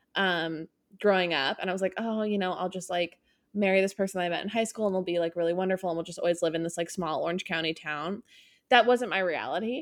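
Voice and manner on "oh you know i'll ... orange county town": ordinary delivery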